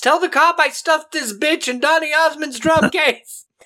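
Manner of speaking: acted, shrill, very high screaming voice. Telling a story where a man's conscience screams as he approaches a woman: retelling a scream. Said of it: "the conscience screams".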